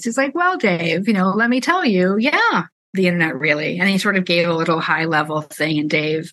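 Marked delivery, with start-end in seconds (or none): 0.3-3.8 knowing tone, as if knowing more. Retelling the interview, imitating Bill Gates answering with a knowing smile. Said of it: "very knowing smile on his face".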